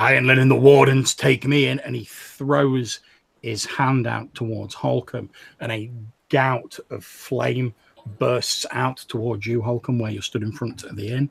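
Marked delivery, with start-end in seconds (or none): 0.0-1.8 rough, gruff, loud yell, hollered out. Game master voicing a character who shouts toward a player: deep gruff shout. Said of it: "in a sort of deep, gruff voice, he shouts out".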